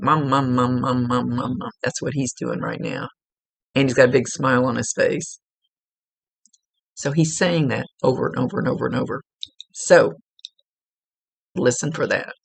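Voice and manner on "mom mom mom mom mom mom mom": annoying, pestering little cartoon-kid voice, repetitive. Describing what someone is doing right now, imitating the Family Guy cartoon kid. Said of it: "that little little cartoon guy goes".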